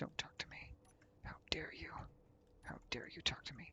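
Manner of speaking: soft, unvoiced mock-offended whisper under the breath.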